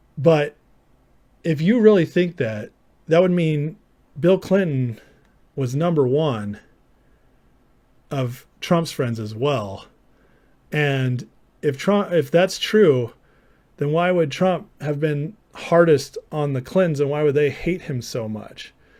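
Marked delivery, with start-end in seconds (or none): 1.5-18.8 slow, deliberate, purposely slowed speech. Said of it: "I'll talk slower".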